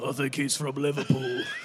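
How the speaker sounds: rough, smoky, raspy heavy-smoker woman's voice. Voicing a woman's line in a story, as a heavy smoker: Ashley's raspy smoker voice. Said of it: "shall I just do like a like she smokes like 20 a day or something?".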